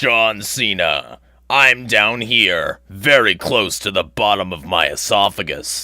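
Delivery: put-on very deep bass voice, loud and drawn-out. Showing a deeper voice that another viewer likes better: very deep voice. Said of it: "likes the, the, the deeper one better".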